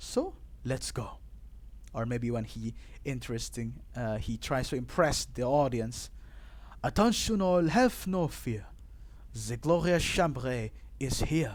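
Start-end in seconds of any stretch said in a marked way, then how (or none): 6.8-11.6 showy, grand, announcing put-on French accent. Imitating a character trying to impress the audience, put-on french accent. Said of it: "like a French guy".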